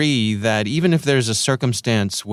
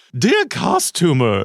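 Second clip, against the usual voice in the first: over-the-top, wacky, exaggerated crazy voice, pitched up; 6 semitones higher than usual. Speaker reads a strange customer message aloud in an exaggerated crazy voice. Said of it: "so I'm going to do a crazy voice here".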